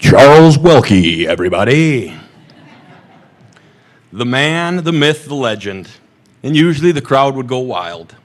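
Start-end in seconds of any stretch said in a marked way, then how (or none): 0.0-5.9 loud, big announcer-style voice. Recalling how they introduced a man entering a room, in their best announcer voice. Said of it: "in my best announcer voice".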